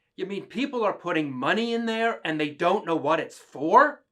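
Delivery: put-on loud, high child voice, blurted out. Retelling a daughter speaking up during Mass: imitating a child speaking up aloud. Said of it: "she spoke up, not whispering".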